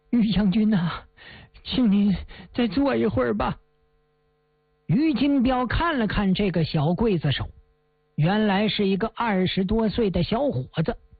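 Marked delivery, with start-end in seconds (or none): 0.1-3.6 quavering, trembling voice on the edge of tears. A young executioner speaks to General Yu before the execution, in a trembling voice. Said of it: "声音颤抖地说呀".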